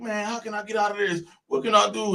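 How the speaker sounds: put-on whiny tone. Speaker retells a voice heard during fingerprinting after an arrest, imitating a whiny tone. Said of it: "I ain't never heard it in that whiny tone".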